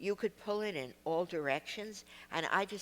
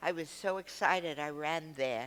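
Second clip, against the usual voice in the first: ordinary talk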